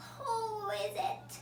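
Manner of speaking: croaking voice. The wolf, hiding in bed, calls toward the knock at the door, in a croaky voice. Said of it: "he called in a croaky voice".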